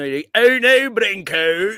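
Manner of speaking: put-on Scottish accent. Trying out accents with co-hosts on the show, scottish accent. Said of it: "I like the more Scottish one".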